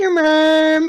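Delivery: every "mom" drawn out slowly. Retelling how they made someone mad: Carl Wheezer voice. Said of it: "doing the Carl Wheezer voice and saying".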